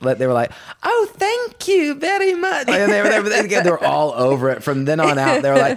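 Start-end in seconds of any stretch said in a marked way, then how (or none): 0.8-2.7 put-on high, hammed-up, overpolite kid voices. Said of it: "really hamming it up".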